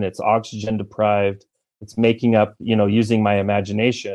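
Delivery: ordinary talk, nothing marked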